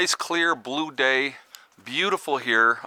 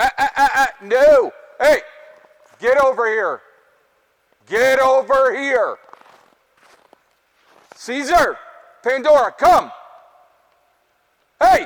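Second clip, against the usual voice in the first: very loud, shrill, high-pitched yelling; 11 semitones higher, 8 dB louder than usual. Breaking off from the group to call the puppies over, yelling at the puppies. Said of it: "Got to yell at the puppies".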